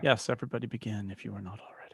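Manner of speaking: hushed, soft, low whisper.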